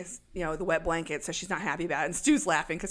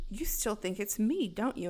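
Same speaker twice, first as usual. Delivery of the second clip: plain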